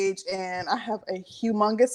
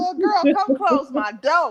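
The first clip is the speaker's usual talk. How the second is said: high-pitched, fussing, scolding voice; 6 semitones higher, 3 dB louder than usual. Repeating the other speaker's words to a little girl: imitating a fussing mom. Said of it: "You said".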